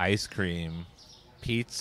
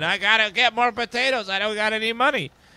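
put-on scream, higher and louder; 13 semitones higher, 5 dB louder than usual. Imitating players up at four in the morning: imitating someone screaming.

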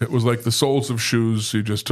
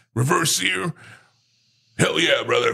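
rough, higher-pitched, hyped-up wrestler-style voice; 6 semitones higher than usual. Describing a picture of Hulk Hogan pointing his finger: Hulk Hogan impression. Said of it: "Nice impression".

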